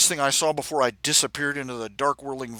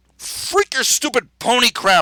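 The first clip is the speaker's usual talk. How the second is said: loud, very high, rage-filled snarl; 10 semitones higher, 7 dB louder than usual. Narrator reading a story, the narrator-hero wheels on the others: snarling. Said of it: "I snarled".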